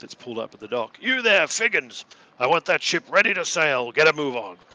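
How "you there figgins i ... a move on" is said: very loud, high-pitched shout. A man leans out a top window and calls to a docked ship, shouting down. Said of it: "leans out and shouts down".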